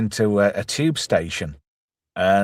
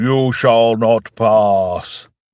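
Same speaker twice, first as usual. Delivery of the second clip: booming, very slow, commanding god voice; 5 dB louder than usual. Retelling a film scene where the space vampire speaks, voice of god. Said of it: "he talks in this like voice of God".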